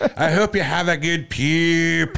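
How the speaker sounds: put-on Scottish accent, high, slow, poop drawn out. Quoting a woman from Scotland: put-on Scottish accent. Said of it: "Scottish accent".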